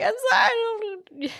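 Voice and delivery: mock very high, little whimpering apology. Retelling a film scene where a character apologizes to her dad: imitating a character whimpering. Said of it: "she's kinda whimpering to her dad".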